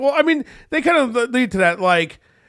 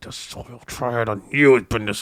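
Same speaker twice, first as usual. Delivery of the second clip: very low, simmering angry voice; 11 semitones lower than usual. Retelling how a show character said his line the last time: imitating a low, mad line. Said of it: "when he was just, like, low and mad".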